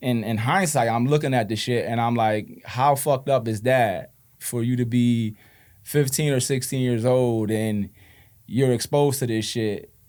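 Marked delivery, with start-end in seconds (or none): none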